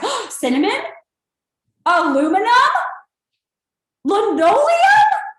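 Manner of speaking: slow, amazed, surprised on every single word. Leading a group speech exercise, the speaker says the three words surprised at each one. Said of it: "said it like you're surprised at each one".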